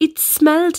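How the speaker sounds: usual speaking voice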